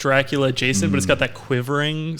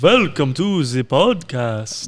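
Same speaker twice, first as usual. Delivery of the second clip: classic spooky horror-movie vampire voice. Podcast host proposing a spooky voice for the Halloween special, in a Dracula voice. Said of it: "I think I'd do like a Dracula".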